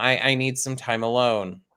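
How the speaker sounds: low, flat, level, unvaried monotone. Retelling what a girl said, the speaker uses a flat monotone. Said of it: "in like such a monotone way".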